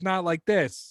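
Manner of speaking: poor put-on Boston accent. A YouTuber admitting his real name, contrasting voices, in a shitty Boston accent. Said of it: "I talk like this".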